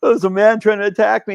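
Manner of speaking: words coming out in tears. Speaker retells reaching their grandmother's after being attacked, retelling crying in tears. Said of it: "I'm like in tears going".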